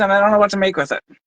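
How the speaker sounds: rushed, too-fast delivery.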